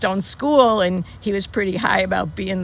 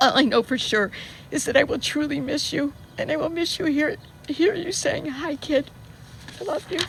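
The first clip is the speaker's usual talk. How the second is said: speaking through tears, crying; 7 semitones higher, 3 dB quieter than usual. Speaker saying goodbye to someone who has died, crying. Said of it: "Sorry for crying".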